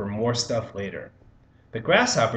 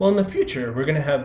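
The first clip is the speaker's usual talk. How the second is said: voice breaking; 3 semitones higher than usual. Speaker explaining a production curve to listeners, voice cracking. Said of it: "that was a good little voice crack".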